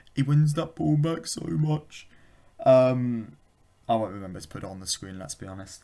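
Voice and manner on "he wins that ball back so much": mock blubbering, sobbing through tears. Retelling a video of a guy praising a player: imitating a crying man. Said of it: "the video of the guy crying".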